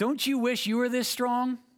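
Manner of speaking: acted-out very high, loud, shrill jeering shout. Rounding the bases after a home run, speaker retells yelling at a baseball legend: retelling a mocking yell. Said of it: "I yelled at Pete Rose".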